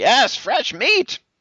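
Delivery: very high, loud tiny dwarf woman battle cry. Voicing an attacker with a dagger and fire in her eyes: tiny dwarf woman voice. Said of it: "this tiny, tiny, tiny dwarf woman".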